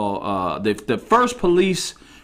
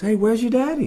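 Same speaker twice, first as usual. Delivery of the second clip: sweet, kind, gentle voice, pitched very high; 9 semitones higher than usual. Acting out a stranger approaching a small child outside, in a put-on very soft, kind voice. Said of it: "with a very soft, kind voice".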